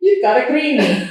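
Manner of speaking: high, invented little accent of no known origin. Repeating the word greenie jokingly, in a made-up accent. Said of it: "I like to say with a little accent".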